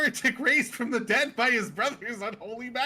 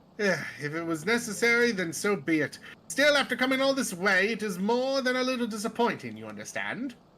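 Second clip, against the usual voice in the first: put-on accent from Britain. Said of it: "I gave him a British accent".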